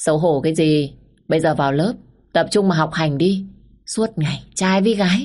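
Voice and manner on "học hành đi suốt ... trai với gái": plain reading voice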